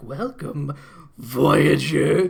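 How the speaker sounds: loud, rough, rasping voice. Retelling a cartoon scene, voicing Megatron: Megatron voice. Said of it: "he's like".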